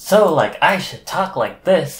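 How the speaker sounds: hyped-up YouTuber delivery, high and excited. Discussing personas and sarcasm, demonstrating an excited YouTuber voice. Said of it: "like an excited uh, YouTuber".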